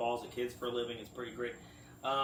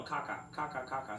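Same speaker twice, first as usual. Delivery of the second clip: ordinary talk, nothing marked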